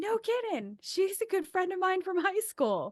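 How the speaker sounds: amazed, delighted exclamation.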